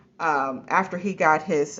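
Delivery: ordinary talk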